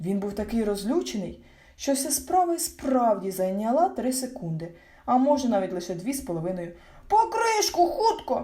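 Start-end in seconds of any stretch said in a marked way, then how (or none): 7.1-8.5 very high-pitched yelling, called out loud. As the ant-lion digs into the sand over the hidden jar, one of them is yelling. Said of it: "заволав мумітроль".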